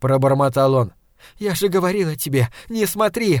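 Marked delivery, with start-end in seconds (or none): 1.4-3.4 tearful outcry, crying out through sobs. A woman shouts at the man collapsed on the floor, shouting through tears. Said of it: "кричала она, размазывая по лицу слезы".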